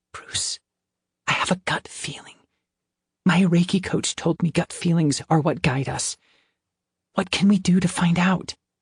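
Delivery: stage whisper, pitched high. Reading a story aloud, a character leaning close and confiding: whispering. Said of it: "and whispered".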